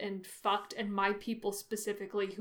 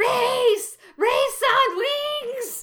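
very high, loud, drawn-out screechy creature voice; 12 dB louder than usual. Discussing the movies, a speaker quotes Gollum's line in a very screechy Gollum voice. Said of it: "in his very screechy voice goes".

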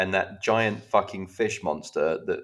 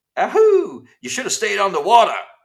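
very high, very loud, swooping put-on American accent; 13 semitones higher, 11 dB louder than usual. Retelling a bad guy's line before he dies: imitating a sudden american accent. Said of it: "has an American accent all of a sudden".

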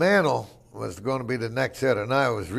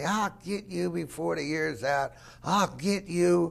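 mock screaming, pitched high; 6 semitones higher, 4 dB quieter than usual. Retelling a player screaming from the top of the dugout steps: imitating someone screaming. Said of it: "screaming at me".

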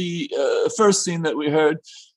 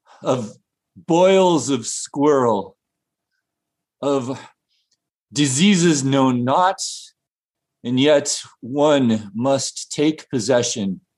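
low, put-on undertaker character voice; 5 semitones lower than usual. In a sketch, the town undertaker speaks to the good lady; town undertaker character voice. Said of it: "the undertaker of the town".

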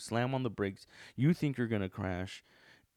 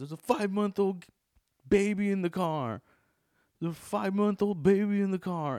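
angry yell, much higher, louder; 10 semitones higher, 6 dB louder than usual. Recounting a road-rage lady yelling from her car; retelling an angry yell. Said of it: "and then she yells".

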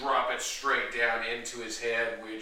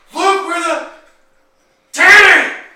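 put-on screaming drunken crazy lady voice, higher and louder; 21 dB louder than usual. Voicing a drunken crazy lady charging at the player: screaming as Jessica Jones. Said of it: "As Jessica Jones screams out".

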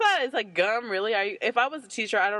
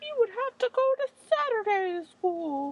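silly put-on small weird voice, higher; 12 semitones higher than usual. Joking about telling people about saturday school when old: put-on weird little voice. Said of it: "That is a weird little voice".

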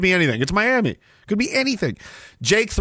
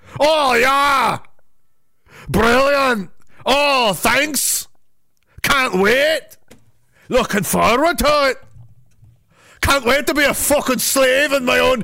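put-on Scottish accent, pitched high; 6 semitones higher than usual. Imagining someone's reaction as the TV was rolled out; imitating a Scottish guy. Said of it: "some Scottish guy doing that".

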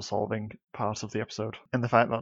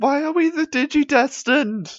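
put-on scream, higher and louder; 10 dB louder than usual. Speaker recalling a cartoon scene, quoting a character's outburst, imitating Mimi screaming. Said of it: "Mimi just screams like".

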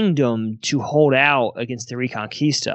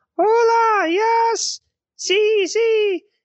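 very high-pitched, very slow, squeaky put-on voice. Retelling a phone call answered by a woman, very high put-on voice. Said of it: "she's got this real high voice. She's like".

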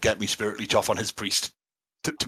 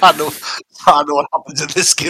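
laughing through words, raised and high; 5 semitones higher, 7 dB louder than usual. Reacting to another speaker's game story, laughing while talking. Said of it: "Sorry, I'm already laughing".

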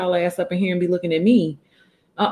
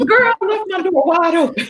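motherly scolding tone, higher and louder; 12 semitones higher, 4 dB louder than usual. Calling out to a little girl who left the door open: sounding like a fussing mom. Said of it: "you sound like somebody mama for real".

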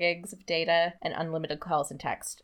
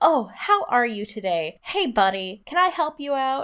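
fake, over-the-top saccharine sweetness, high and slow; 7 semitones higher, 5 dB louder than usual. Complaining about fake friendly shtick, the speaker mimics it: fake saccharine-sweet. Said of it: "like saccharine sweet shtick".

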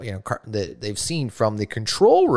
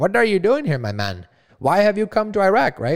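poor soldier voice, pitched up higher; 7 semitones higher than usual. Telling a story, voicing what the Iraqi soldier asks: poor imitation of Iraqi soldier. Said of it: "I'm going to do a poor imitation here".

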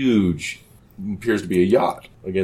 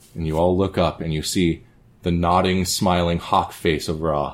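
ordinary delivery

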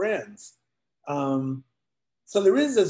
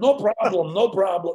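put-on half-done, partial Russian accent; 3 semitones higher, 4 dB louder than usual. Retelling a bit from tapes made on the road: partial Russian accent. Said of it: "partial Russian accent".

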